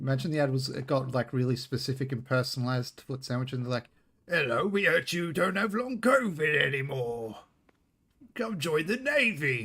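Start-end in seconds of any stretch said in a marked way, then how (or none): 4.3-9.7 high, swooping cartoon pirate character voice. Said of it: "why do they sound like a cartoon character pirate".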